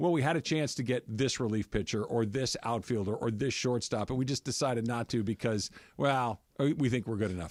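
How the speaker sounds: normal talking voice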